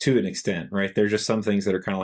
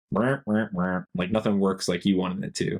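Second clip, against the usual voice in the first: ordinary talk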